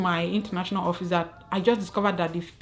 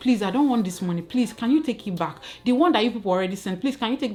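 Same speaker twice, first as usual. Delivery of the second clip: put-on begging tone, quicker; 2 semitones higher than usual. Recounting how they begged them to take the money back, retelling own begging. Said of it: "I was begging".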